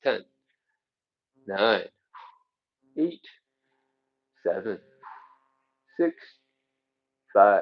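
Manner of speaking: squeezed, strained voice. Leading a stretch, counting down the seconds for the listener, strained voice from neck stretch. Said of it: "If it sounds like my voice is weird, it's because I'm stretching out my neck muscles".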